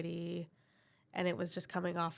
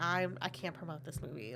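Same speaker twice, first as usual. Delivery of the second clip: ordinary talk, nothing marked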